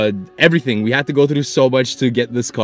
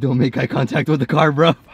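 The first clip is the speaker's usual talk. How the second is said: panicked, panicking tone; 3 semitones higher than usual. As the speaker's parents drive up, talking to a companion: panicking. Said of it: "I'm fucking panicking".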